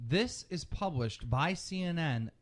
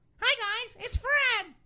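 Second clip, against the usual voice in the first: very high, squeaky, loud chipmunk voice; 5 dB louder than usual. Arguing over a suggestion, the speaker mimics the cartoon character Fred; Fred's chipmunk voice. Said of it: "He's got the chipmunk voice".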